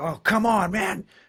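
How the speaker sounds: shrill, high, stretched, exasperated shout. Acting out being stuck in a traffic jam: acting out a frustrated shout. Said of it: "I'm shouting. I'm like".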